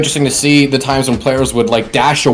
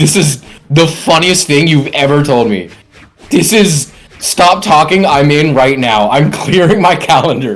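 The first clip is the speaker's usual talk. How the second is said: usual speaking voice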